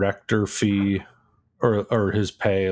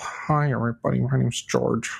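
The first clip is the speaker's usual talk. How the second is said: creaky public-persona stage voice; 4 semitones higher than usual. Mocking a film director's public persona, imitating George Lucas's public voice. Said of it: "that's a character".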